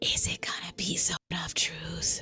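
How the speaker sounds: loud, carrying, badly hidden stage whisper. Narrating a fantasy game, voicing Treebush speaking to Sloone: Treebush's loud whisper. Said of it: "that loud, terrible whisper that Treebush loves to do".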